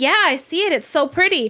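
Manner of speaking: high, put-on, unconvincing fake enthusiasm. Retelling a child pretending to see a rainbow: imitating a child faking excitement. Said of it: "at first she was faking".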